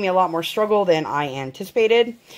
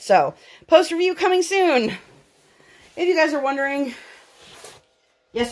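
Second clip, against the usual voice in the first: breathless, winded, scrambling for air, pitched up; 7 semitones higher than usual. Reviewer wrapping up a kit showcase, out of breath. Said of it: "I am out of breath".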